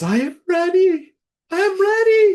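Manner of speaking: shrill, very loud, high, frenzied screaming yell. Narrating a mall Santa who breaks from the circle and yells, yelling. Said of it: "breaks from the circle and yells".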